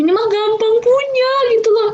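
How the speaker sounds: amazed realization.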